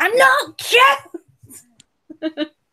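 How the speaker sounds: very high shriek, voice cracking and breaking. Picturing a chibi avatar yelling at everybody, screaming with voice cracking. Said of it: "just screaming at everybody, going".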